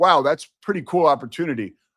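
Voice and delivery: ordinary talk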